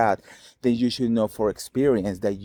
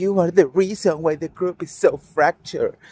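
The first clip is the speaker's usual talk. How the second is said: acted-out high, shrill screaming; 8 semitones higher, 4 dB louder than usual. Describing castmates confronting Meredith, retelling a scream. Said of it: "Heather screaming at you and Whitney screaming".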